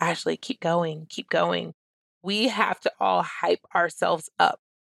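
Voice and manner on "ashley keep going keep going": imitated whisper. Retelling words said to oneself under one's breath: imitating own whisper. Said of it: "I remember whispering to myself".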